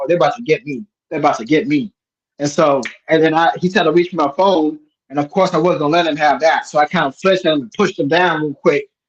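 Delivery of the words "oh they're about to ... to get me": normal talking voice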